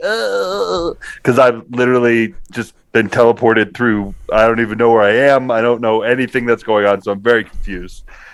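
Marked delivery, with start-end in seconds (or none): 0.0-0.9 high-pitched squeaky voice. Playing a confused, just-teleported armored gnome: high-pitched squeak. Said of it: "high-pitched squeak".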